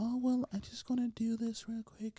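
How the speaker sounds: high-pitched, hushed, soft half-whisper. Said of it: "then start talking like that".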